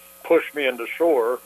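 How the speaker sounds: normal talking voice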